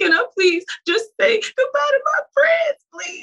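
crying, sobbing, begging at a very high pitch. Recounting begging a woman to let the speaker say goodbye to friends: re-enacting sobbing pleading. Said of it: "I boohoo, sobbed, cried".

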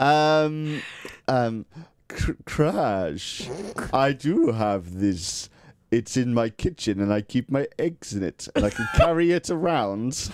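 slow, deliberate character voice. Answering a request to speak in Cortex voice about a ring. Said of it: "in your Cortex voice".

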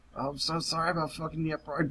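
on the verge of laughing, holding it back. Imitating Kojiro's apology to the crippled man: imitating Kojiro about to crack up. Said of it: "one second away from just, like, cracking up".

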